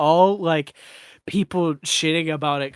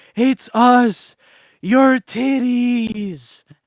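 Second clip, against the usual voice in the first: very slow, drawn-out, loud, high talking-breasts voice; 7 semitones higher, 6 dB louder than usual. Retelling a movie where a pregnant woman's breasts talk to her: talking breasts voice. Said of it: "the voice goes".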